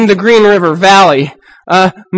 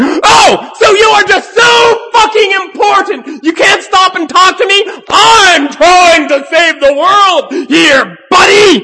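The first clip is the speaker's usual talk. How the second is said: very high, furious, ranting yell; 10 semitones higher than usual. Reading a story aloud, voicing a veteran competitor chasing strangers: shouting angrily. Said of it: "They shadow strangers two blocks shouting".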